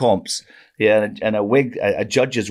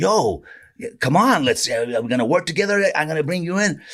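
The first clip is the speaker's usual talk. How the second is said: put-on drawling, laid-back, wild Californian accent; 7 semitones higher than usual. Retelling how the man running the bar invited him to work together: crazy Californian drawl. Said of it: "crazy Californian drawl".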